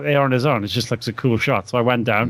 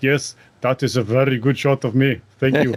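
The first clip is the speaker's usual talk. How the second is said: put-on South African accent. Speaker imitates his mate Don's reply, doing Don's South African voice. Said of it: "in his South African voice".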